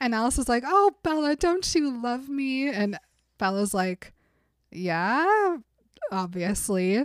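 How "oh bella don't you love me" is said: pitched-up, mournful, fake-sad put-on voice. Retelling how Alice curled up next to Bella and asked her, imitating Alice's sad voice. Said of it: "Alice gets on this whole sad voice".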